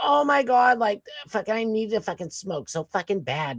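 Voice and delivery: put-on Massachusetts accent. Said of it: "She's got the Massachusetts accent".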